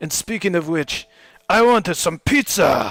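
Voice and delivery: exaggerated Japanese accent, loud. Quoting a cartoon rat sensei praising the turtles: imitating Splinter's stereotypical Japanese accent. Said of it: "kind of stereotypical Japanese accent".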